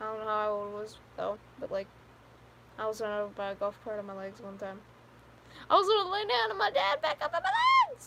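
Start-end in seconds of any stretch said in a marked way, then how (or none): 5.7-8.1 voice pushed very high. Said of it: "That's not the highest pitch my voice can go".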